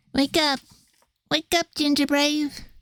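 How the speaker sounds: high, put-on character voice, called out. Narrating a story, calling on Ginger Brave to wake, in a sugar gnome voice. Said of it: "I was trying to do a impression of the sugar gnome".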